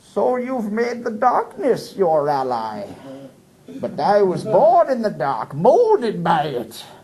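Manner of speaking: slow, drawn-out delivery with big pitch swings. Answering a partner in role play, doing Bane from Dark Knight Rises. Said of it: "I'm gonna do Bane from Dark Knight Rises".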